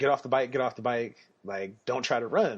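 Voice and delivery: ordinary talk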